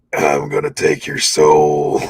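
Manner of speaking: very deep, rough, menacing wrestler-style voice, low and ominous. Showing the impression you used to sit there and do, a crappy Undertaker impression. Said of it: "crappy Undertaker impression".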